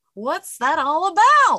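belted high, slow and swooping. Mocking a voice just called annoying: Jerry Seinfeld impression. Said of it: "that's my impression right there".

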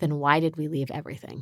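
very quiet speech. Retelling a family story, the speaker quotes a man calling the speaker's mom back, very quietly. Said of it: "he said very quietly".

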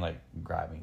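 ordinary delivery

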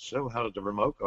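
acted quiet, low voice. Retelling what the general manager said to him after the event: very quiet. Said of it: "general manager very quietly says to me".

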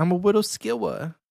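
high, put-on little kid voice. Asked what that voice was, the speaker repeats it: little kid voice. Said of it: "It was a little kid voice".

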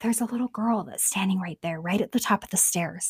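quick, rushed, hushed stage whisper. Retelling a scene where a man at the bottom of the stairs points, imitating a half-whisper. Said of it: "And he whispers".

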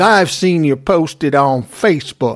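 imitated Southern accent. Retelling a confrontation, quoting the other man: put-on Southern accent. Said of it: "He doesn't really have a Southern accent".

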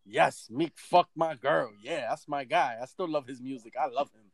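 put-on proud voice. Imitating a dude on a show: imitating someone sounding proud. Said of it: "very proud. Like".

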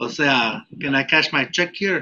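strong, thick Mexican accent. On a podcast, the speaker shows how drinking brings out an accent: thick mexican accent. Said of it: "I'll start sounding more like".

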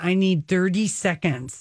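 ordinary delivery

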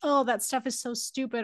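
normal talking voice

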